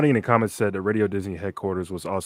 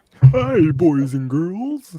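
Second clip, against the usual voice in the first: put-on very high-pitched, loud, belted kids'-host voice; 10 semitones higher, 7 dB louder than usual. Answering whether another person would have made a good Barney: Barney voice. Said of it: "that Ken guy would have been a good Barney".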